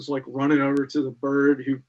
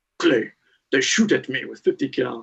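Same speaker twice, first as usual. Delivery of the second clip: low, rumbling, growly voice. Retelling what a man said to him, quoting him: imitating a low, growly voice. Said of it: "as he always talked in a low, growly voice".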